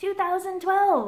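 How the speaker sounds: high, loud, amazed outburst.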